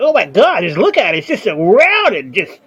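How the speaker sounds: put-on disgusted girly gushing. Retelling how some women reacted to what they saw, imitating disgusted women. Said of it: "how disgusted these chicks were".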